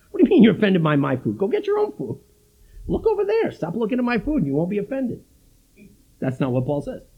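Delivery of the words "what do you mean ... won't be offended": swooping New York accent, full of attitude. Acting out a reply to a brother offended by food: playing a New Yorker. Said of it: "it's New Yorkers who think like this".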